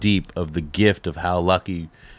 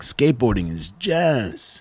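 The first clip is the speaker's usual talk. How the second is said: put-on excited voice, higher pitch; 3 semitones higher than usual. Retelling what he said about skateboarders, imitating his excitement. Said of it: "he's just so fucking excited".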